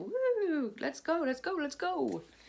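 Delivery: playful, buzzy excitement, high and swooping pitch. Explaining that fizzy drink made them buzzy: playfully acting hyped up. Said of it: "I'm a bit, (buzzy, drinking Doctor Pepper)".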